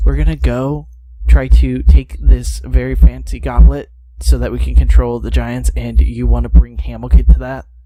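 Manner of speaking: loud theatrical whisper. In a role-play scene, voicing Steve, half-whispering. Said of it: "Steve starts whispering. He goes".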